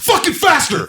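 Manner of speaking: very high, loud, furious yelling. Retelling yelling at a kid buttoning his jacket, retelling his own yelling. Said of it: "And I'm like yelling at this kid".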